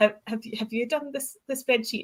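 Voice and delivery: play-acted, woeful, little, pitiful pleading voice. Retelling asking Chris whether the trip spreadsheet was done, mock-pitiful voice. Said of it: "pitiful voice when you said that?".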